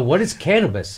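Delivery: feigned innocent confusion. Retelling answers to a cop's questions: imitating playing dumb. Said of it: "I was playing dumb all the way".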